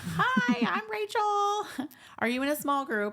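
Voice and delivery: mock-chipper, perky, very high sing-song. Retell how Rachel came over and asked if you were in a small group, imitating a chipper Rachel. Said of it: "comes like all chipper".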